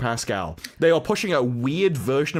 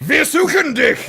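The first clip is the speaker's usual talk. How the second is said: harsh, forceful, aggressive German, pitched very high; 13 semitones higher, 8 dB louder than usual. Showing how to say a german phrase properly: aggressive german delivery. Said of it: "you have to be aggressive".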